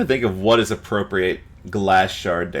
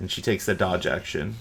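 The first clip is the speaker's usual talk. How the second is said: ordinary talk, nothing marked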